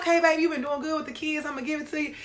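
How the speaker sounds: comedic mama character voice.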